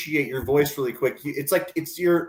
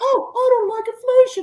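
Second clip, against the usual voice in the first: loud, shrill, squeaky elf parody voice, very high; 5 dB louder than usual. Teasing another speaker for sounding like a liberal elf, mocking elf-like voice. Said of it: "you just sound like Shag Dog, the liberal elf".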